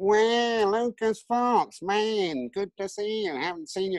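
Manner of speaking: very high, slow, drawn-out whiny voice. Retelling how Larry Wallace greeted the speaker on turning up, in Larry Wallace's whiny voice. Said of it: "he had this really whiny voice".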